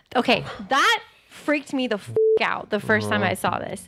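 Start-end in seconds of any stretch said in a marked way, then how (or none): none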